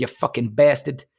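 put-on Boston accent. Retelling a chat with a lady, the speaker says the words in a boston accent. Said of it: "I can do a little bit of the accent".

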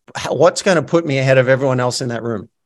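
normal talking voice

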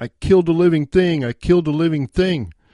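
mock crying, high, screaming child's sobbing wail. Retelling running home to mom at seven, imitating crying and screaming. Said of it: "I busted in the house crying and screaming".

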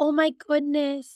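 put-on condescending tone. Retelling what a client said on a call: imitating a condescending client. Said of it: "she was talking down to me".

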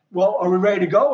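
ordinary talk

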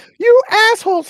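high voice with giggles. Imagining how she'll react to an episode, imitating her little giggle. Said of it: "In her little giggle".

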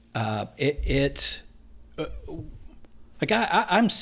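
stuttering a little, halting and starting over.

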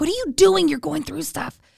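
high, panicky, freaked-out voice. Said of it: "my mom used to get so freaked out".

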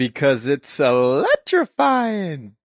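swooping, animated way of talking. Imitating what the absent co-host would say: imitating Tracy. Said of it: "I think I kinda sounded like her".

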